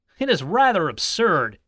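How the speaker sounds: ordinary delivery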